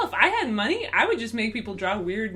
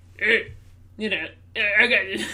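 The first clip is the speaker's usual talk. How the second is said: put-on alien voice. Trying out voices with a friend, the speaker does a Jabba the Hutt voice. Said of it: "Like some sort of Jabba the Hutt".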